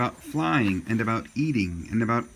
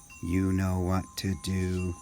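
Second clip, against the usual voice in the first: low, flat, slow robot voice; 4 semitones lower, 4 dB quieter than usual. Reading a story aloud, voicing Roz in a robot voice. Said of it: "that should have been a robot voice".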